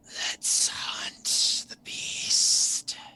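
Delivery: whispered demonic voice. Game master voices Naden answering Nathan inside his mind, in Naden's demonic voice. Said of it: "you hear the the demonic voice in your mind".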